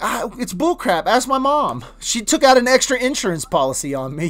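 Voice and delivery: plain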